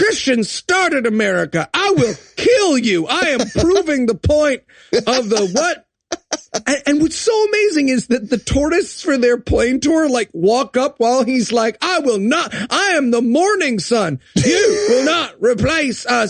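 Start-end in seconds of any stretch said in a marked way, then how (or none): 11.8-16.3 put-on angry rant, slower. Speaker retells a man ranting as tourists walk up, imitating an angry rant. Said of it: "I was just angrily ranting".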